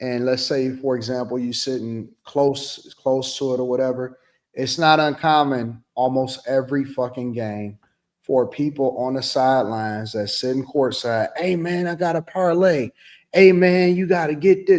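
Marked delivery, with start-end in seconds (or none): 11.4-14.8 play-acted loud hollering. Retelling what courtside fans say to players at games: imitating someone yelling. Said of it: "They yelling".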